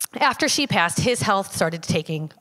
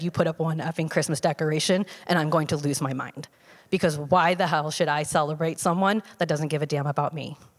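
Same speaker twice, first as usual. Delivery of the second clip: ordinary talk, nothing marked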